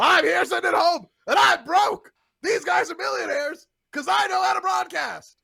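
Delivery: fed-up, high, loud shouted rant.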